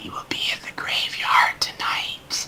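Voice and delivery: hushed rat-voice whisper, close to the ear. Game master voicing a rat that whispers into a player's ear, whispering. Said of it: "It whispers into your ear".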